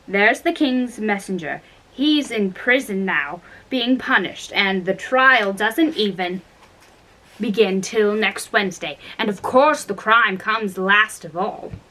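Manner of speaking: ordinary delivery, nothing marked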